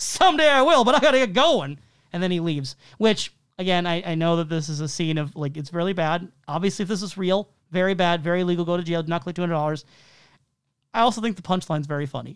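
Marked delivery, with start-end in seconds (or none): 0.0-1.8 loud, high, mock jokey voice. Describing a scene, quoting a man as he pulls away: retelling a loud joking line. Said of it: "loudly says in a joking voice".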